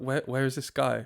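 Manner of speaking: plain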